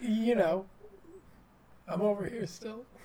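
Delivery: wavering, shaky, uncertain-sounding delivery. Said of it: "Your voice sounded so shaky and so unsure".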